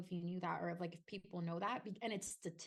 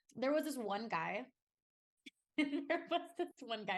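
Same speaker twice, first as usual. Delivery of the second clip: high, anxious laughter breaking into the words; 5 semitones higher, 4 dB louder than usual. Telling her story, the speaker starts to mention one guy with nervous anxiety laughter. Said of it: "I'm sorry, I'm laughing. I get anxiety laugh".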